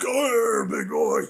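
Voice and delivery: gruff, loud, rough pro-wrestler hype voice. Recalling what they called out in the pool, in a loud wrestler voice. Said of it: "I like to use my loud wrestler voice".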